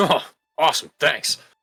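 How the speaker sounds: loud, rough, gruff voice. Narrating a scene, the speaker voices one of the guards: gruff voice. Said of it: "And you hear a gruff".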